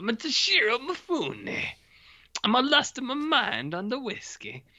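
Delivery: put-on Italian accent, pitched very high, squeaky. Voicing a film character in the style the other speaker called Italian: Italian-accented Toshiro Mifune impression. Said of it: "I like this Italian Toshiro Mifune".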